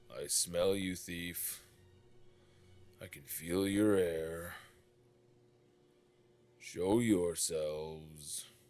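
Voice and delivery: deep, loud, churning, rumbling dragon monster voice. A game master voices the unseen red dragon to the players: deep rumbling churning voice. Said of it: "this deep rumbling churning voice".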